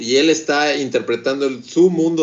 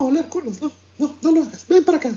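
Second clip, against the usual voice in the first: very high, fussing society lady voice; 14 semitones higher than usual. Imitating the ladies at the park who pamper their dogs: imitating the dog-club ladies. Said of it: "en estos clubs night de señoras era como de".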